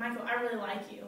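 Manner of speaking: normal talking voice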